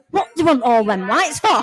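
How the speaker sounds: put-on appalled Yorkshire farmer accent, at top volume. Retelling Tristan's remark in the small dining room, in a loud Yorkshire farmer accent. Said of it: "in his best farmer Yorkshire accent, on top of his voice".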